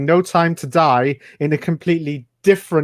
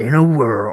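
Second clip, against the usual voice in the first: deep, low movie trailer voice-over narrator voice; 4 semitones lower than usual. Recalling the old guy who talked over eighties trailers: deep movie trailer voice. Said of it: "the old guy with the deep voice who used to talk over the trailers".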